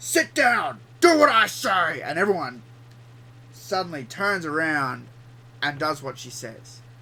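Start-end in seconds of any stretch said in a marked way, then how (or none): 0.0-2.0 very loud, drawn-out, shrill, furious voice. Acting out how she changes her attitude, imitating an angry voice. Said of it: "she then uses an angry voice".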